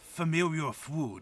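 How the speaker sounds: half-grumbled, grumbling character voice. Playing a character who smells something familiar, in a grumbly voice. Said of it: "a grumbly voice".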